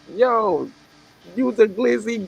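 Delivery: unsure attempted New York accent, very high pitch. Friends discussing New York culture, one trying an attempted New York accent. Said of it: "I don't know what accent is is this".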